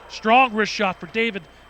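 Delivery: plain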